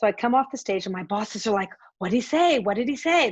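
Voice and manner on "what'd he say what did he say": put-on loud, anxious, pressing, said twice. Retelling bosses pressing for news after the panel: imitating nervous bosses. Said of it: "They were all nervous".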